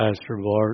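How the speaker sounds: deep, very low, hushed, barely audible murmur. Retelling being woken at night by a voice, imitating John's very low voice. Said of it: "John has this very low voice".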